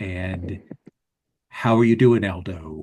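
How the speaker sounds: deep, dropped-low bass hyena voice. The narrator voices Cantorian Wolf greeting Aldo, in a deep bass Cantorian Wolf voice. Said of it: "that sort of hyena with a deep bass voice".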